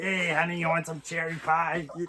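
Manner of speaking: smoky smoker voice. Speaker demonstrating the diner smoker voice they're not into: diner smoker voice. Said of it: "the whole diner smoker voice".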